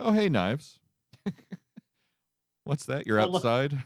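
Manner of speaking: fake-casual, feigned surprise. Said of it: "I love his tone".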